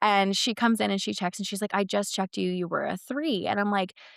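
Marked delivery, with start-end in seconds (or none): 1.7-3.5 acted annoyed, irritated, put-out voice. Retelling how the nurse answered during shift change: imitating an irritated nurse. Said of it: "I can tell she's kinda irritated".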